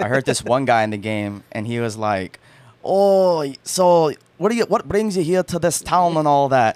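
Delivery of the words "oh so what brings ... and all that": put-on funny odd Scottish accent, higher, louder, slower. Quoting a man heard in a video game, in a funny strange Scottish accent. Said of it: "strangest Scottish accents I have ever heard".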